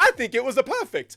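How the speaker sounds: very high, very loud, belted character voice. Retelling a cameo that approved the movie's accents: Charles Martinet's Mario voice. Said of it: "it's Charles Martinet, and he says".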